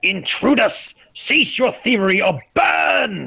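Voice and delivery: screaming loudly. Voicing a voice that warns intruders poking around a room: screaming loudly. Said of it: "Screams loudly".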